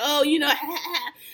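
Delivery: put-on mocking, teasing voice. Retelling how someone went back to clowning another person: imitating mocking clowning. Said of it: "went right back to clowning her".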